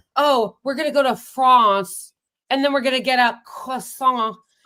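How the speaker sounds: affected, pretentious, snooty voice. Talking about pronouncing foreign words, the speaker mimics one of those douchebags, imitating a douchebag. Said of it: "as one of those douchebags".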